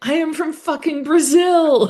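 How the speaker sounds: put-on very high, shrill, drawn-out hollered drunken scream. Retelling how a drunk friend at a football game yelled: imitating Diego screaming. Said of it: "was screaming".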